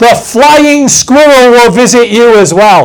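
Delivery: big, loud, booming, threatening bellow. Retelling what a man told the church about tithing, in a bellowing voice. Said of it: "with a bellowing voice".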